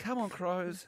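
high, polite football supporter cheer.

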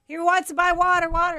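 put-on high, chirpy little-girl voice.

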